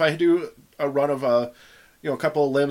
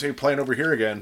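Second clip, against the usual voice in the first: ordinary talk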